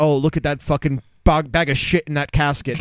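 ordinary talk

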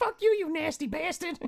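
put-on woman's yell. Recounting a phone argument, quoting what the woman yelled, retelling a yell. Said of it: "And she's yelling at me".

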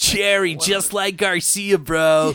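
very slow, high, put-on stoner drawl. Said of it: "Did you just wanna do that voice".

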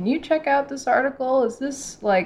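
high, eager voice. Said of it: "reach out to me personally and be like".

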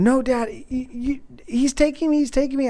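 put-on high, upset child voice screaming. A dad recounts his four-year-old's fit in a store, imitating a child screaming. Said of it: "he's screaming at me".

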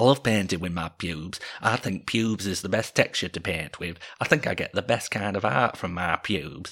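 put-on broad English accent, dub-voice style. Retelling a show's dubbed-over line from childhood, in a broad English accent. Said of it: "they would dub it with like broad English accents".

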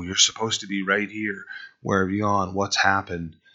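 heartbroken, searching calling out. Voicing God calling out to Adam and Eve: imitating a brokenhearted call. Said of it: "he's brokenhearted. He's calling out to them".

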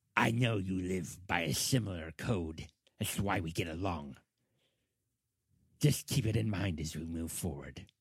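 ratfolk creature voice. A game master voices the ratfolk guide speaking to a player, ratfolk guide voice. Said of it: "And he's saying this in rat folk. / and he looks back at you and he says, / He is going to lead you to this chamber that contains this door that he refers to as the singing door".

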